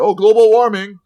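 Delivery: shrill, very loud, fake American accent. Retelling how a woman greeted the speaker each time, in a fake American accent. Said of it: "She does like a fake American accent".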